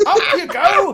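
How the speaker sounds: put-on very high, loud, shouting old woman voice.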